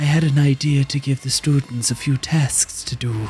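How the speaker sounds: put-on Irish priest voice. Retelling what a passing priest said while walking with an altar boy, in an Irish father voice. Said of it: "in the most like Irish father voice".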